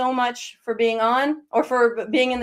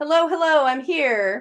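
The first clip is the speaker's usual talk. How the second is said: acted-out, drawn-out call; 4 semitones higher than usual. Retelling how the grandmother comes in: imitating a loud greeting. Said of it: "this loud greeting".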